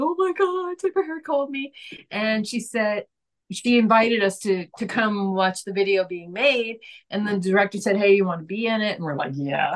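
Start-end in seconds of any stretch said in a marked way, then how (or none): 0.0-1.7 put-on very high tearful crying. Retelling how a man called her up, imitating him crying on the phone. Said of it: "he called me up crying".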